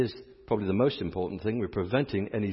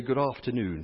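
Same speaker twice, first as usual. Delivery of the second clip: best-effort put-on British accent; 3 semitones higher than usual. Greeting a British man walking by at the Garden Tomb, in best British accent. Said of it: "in my best British accent".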